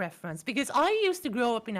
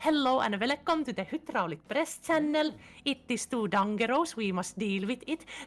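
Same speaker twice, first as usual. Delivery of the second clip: thick put-on Finnish accent, laid on heavy. Speaker imitates how the Hydraulic Press Channel hosts speak, thick Finnish accent. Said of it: "That is how a thick Finnish accent sounds".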